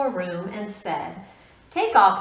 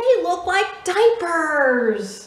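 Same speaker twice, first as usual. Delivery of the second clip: put-on high, whiny voice like a small kid; 8 semitones higher, 3 dB louder than usual. Reading a story aloud, voicing the character answering his mom, Froggy's whiny voice. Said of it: "whined Froggy".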